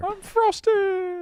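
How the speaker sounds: very high pipsqueak tiny miniature-man voice. Pretending to be a Pop-Tart in a group bit, the speaker uses a tiny Pop-Tart voice. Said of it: "Do like a miniature man voice".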